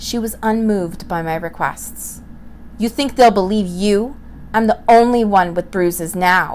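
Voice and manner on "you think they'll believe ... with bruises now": sneered with scorn. Narrator reading her mother's reply to the narrator, sneering. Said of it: "she sneered".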